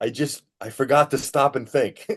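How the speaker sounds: mock weepy, high, tearful words through sobs. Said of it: "he was, like, crying".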